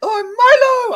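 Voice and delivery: squeaky, loud, high voice with drawn-out "oh". Trying to recall how the character's voice went: Milo from Tweenies voice. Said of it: "How did his voice go?".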